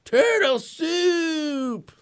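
high-pitched yell, slow and drawn out.

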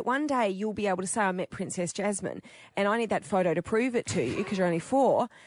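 plain

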